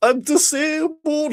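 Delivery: very high, slow, pathetic, panicking pitiful whine. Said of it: "he goes".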